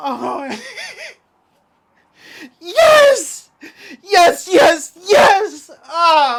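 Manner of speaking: tearful joy, very drawn out, swooping, slow happy sobbing. Reacting with excitement to something perfect: happy crying. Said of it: "the most insanely happy tears rolling down my face".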